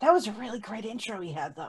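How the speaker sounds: hushed, half-whispered, in a character voice. Voicing a character leaning over to another: half-whispering in character. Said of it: "whispers to them behind her".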